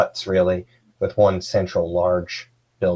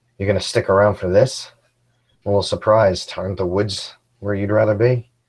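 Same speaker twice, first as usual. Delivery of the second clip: mock, sly, smug, needling teasing tone; 4 dB louder than usual. Voicing a character who smirks at a companion: smirking, teasing tone. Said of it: "give a little smirk and almost be like".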